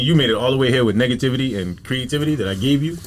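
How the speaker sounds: plain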